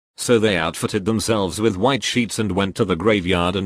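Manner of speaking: ordinary delivery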